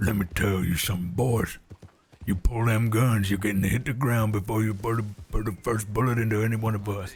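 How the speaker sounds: extreme, loud, rough, menacing, scary-sounding tough voice. Contrasting a character with lore characters: rough, scary-sounding voice. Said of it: "very extreme and rough and scary sounding".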